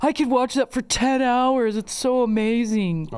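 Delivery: stoned, drugged-sounding voice. Teasing Brendan by imitating how he talked, in a stoned voice. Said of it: "what you talk like when you're on drugs".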